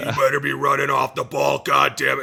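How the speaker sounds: hoarse, raspy, rough, hard-driving tough coach voice. Describing his former NFL offensive line coach, raspy Chris Foerster impression. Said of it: "he's got a real raspy voice".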